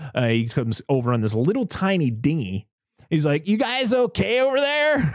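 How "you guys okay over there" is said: put-on, very high, squeaky drunk man's voice. Retelling a movie scene, imitating a drunk man on a dinghy. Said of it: "That's literally how he sounded".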